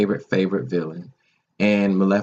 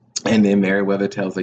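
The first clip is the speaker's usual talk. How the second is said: ordinary talk, nothing marked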